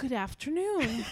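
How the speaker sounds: put-on English accent. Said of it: "I didn't say it in English accent".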